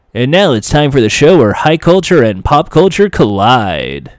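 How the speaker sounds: quiz show announcer voice, game show style. Describing a game show's opening, speaker imitates its announcer: You Don't Know Jack announcer voice. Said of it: "an omnipresent voice that goes".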